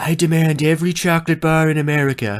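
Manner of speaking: booming showman delivery, pitched high. Retelling a guy's one-liner joke mixing Trump and Willy Wonka: Donald Trump impression. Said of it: "who can do like a perfect Trump".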